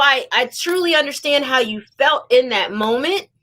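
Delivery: plain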